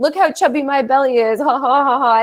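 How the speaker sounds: mock playful, silly child voice, laughing and giggling. Retelling how a six-year-old daughter jokes about her belly: imitating a silly, laughing child. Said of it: "being silly about it".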